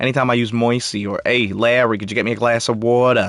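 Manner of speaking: put-on New Jersey accent. Chatting about comics, the speaker slips into a Jersey accent. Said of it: "Why do I always go into a Jersey accent here?".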